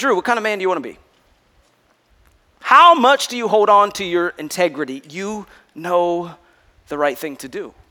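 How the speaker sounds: steady, calm, low, still inner voice. Retelling a second inner voice that spoke to drew, acting out a calm, still voice. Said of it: "a little calmer voice, stiller voice".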